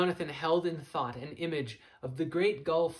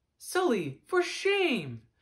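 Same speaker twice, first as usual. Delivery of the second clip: very high, swooping, chiding, reproachful tone; 10 semitones higher, 3 dB louder than usual. Reading a man answering a friend who says he'll miss him, in reproach. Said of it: "Jonathan said in reproach".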